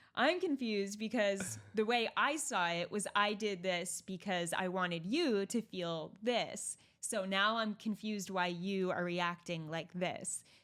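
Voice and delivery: ordinary talk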